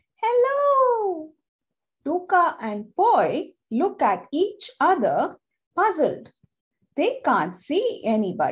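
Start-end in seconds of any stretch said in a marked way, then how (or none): 0.2-1.3 small, tiny, very high-pitched squeaky voice. Reading a story aloud, a tree greets the children: small squeaky voice. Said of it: "a small squeaky voice say".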